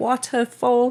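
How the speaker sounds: put-on high, slow British accent. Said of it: "So she's British 'cause her dad is".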